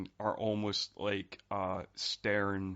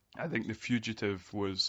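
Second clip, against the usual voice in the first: normal talking voice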